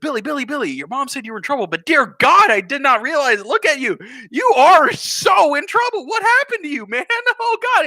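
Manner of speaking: very high, swooping, frantic panicked babble. Telling a story about a father walking in on his troubled son and fretting over him, imitating his panic. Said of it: "he's just like freaking out right now".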